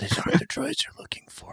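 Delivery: high, soft whisper. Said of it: "people were, like, whispering the lines".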